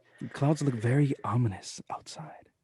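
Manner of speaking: soft, calm radio-announcer voice. After a sports segment ends, the speaker talks in an ASMR NPR voice. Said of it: "A S M R N P R voice you got there?".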